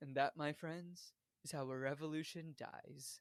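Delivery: very quiet, hushed, menacing, ominous voice. Quoting a character's line over the speaker system: ominous Haymitch voice. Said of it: "Just the ominous voice and just goes".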